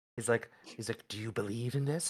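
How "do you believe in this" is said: put-on whisper. Retelling how a character sidles up and whispers: imitating a character whispering. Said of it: "getting next to her and whispering".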